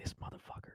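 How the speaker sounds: hushed whisper under the breath. Retelling lying awake in bed while someone snored: imitating own whisper. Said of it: "I literally whispered".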